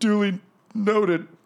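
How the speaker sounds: high, slow, weary drawl.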